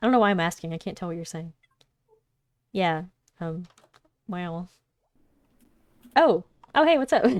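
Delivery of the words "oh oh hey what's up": over-eager, gushing, overly enthusiastic, loud and high. Greeting someone who needs to talk about money, overly enthusiastic. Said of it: "You sound like overly enthusiastic".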